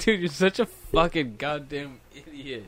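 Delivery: plain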